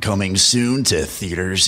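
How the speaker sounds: movie trailer narrator announcer voice. Finishing a friend's line in a movie trailer voiceover-off, in movie trailer voiceover. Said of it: "Movie trailer off?".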